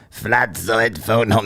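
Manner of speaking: deliberately bad, put-on alien voice. A livestream host jokes about a guest's neck: terrible E.T. impression. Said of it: "There's a terrible impression of E T".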